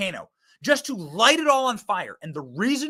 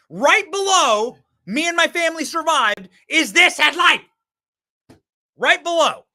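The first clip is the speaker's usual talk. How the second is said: elated, overjoyed, excited yelling with rising pitch; 7 semitones higher, 5 dB louder than usual. A broadcaster listing the happiest things on a show, happy yelling. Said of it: "Sorry, I'm going to stop yelling".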